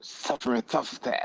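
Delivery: high, soft lisp on every s, cartoon-cat style. Explaining old pronunciation with a cartoon example: Sylvester the cat lisp. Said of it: "they'll do it in a cartoon like Looney Tunes with Sylvester the cat".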